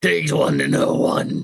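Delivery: rough, gravelly voice. A game narrator voicing a character answering a player's insult, in a gravelly voice. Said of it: "like a gravelly voice".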